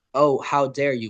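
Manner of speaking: ordinary talk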